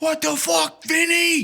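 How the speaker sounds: very high, slow, drawn-out yell. Imitating a former boss who yells on the phone: imitating a boss yelling. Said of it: "And start yelling".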